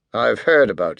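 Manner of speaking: ordinary delivery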